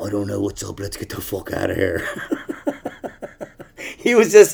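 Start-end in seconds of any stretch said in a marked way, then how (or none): 0.0-2.1 put-on deep, soft voice with Australian accent. Act out the man leaning on his guitar suddenly answering you in a deep Australian voice. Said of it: "like, a deep Australian voice".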